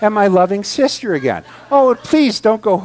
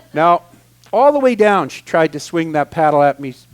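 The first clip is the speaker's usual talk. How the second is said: usual speaking voice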